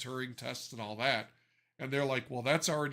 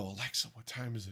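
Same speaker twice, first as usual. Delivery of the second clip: quiet, hushed half-whisper; 4 dB quieter than usual. Retelling asking the bathroom speaker the time in the morning: imitating own half-whisper. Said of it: "and I'll whisper to it".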